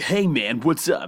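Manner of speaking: extremely American voice-actor accent, drawn out. Describing a game's voice actors, giving an example line in a very American accent. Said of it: "they have a very American accent".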